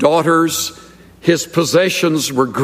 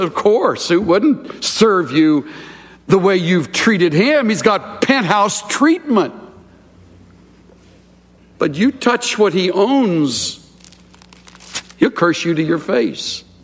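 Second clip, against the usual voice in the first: scornful, mocking, put-on sarcastic tone; 3 semitones higher than usual. Retelling Satan's reply to the Lord about Job: sarcastic Satan voice. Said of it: "standard operating procedure of sarcasm".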